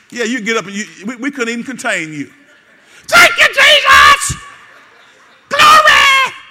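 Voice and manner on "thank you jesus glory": very high, very loud, shrill, swooping, drawn-out shout. Speaker addressing a church congregation, acting out their reaction to good news: put-on high voice. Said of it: "Voice get all high".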